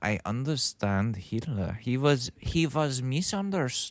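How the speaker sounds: put-on Danish accent. Reacting to a festival clip, mimicking the speaker: imitating a Danish director's accent. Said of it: "I can't do that accent".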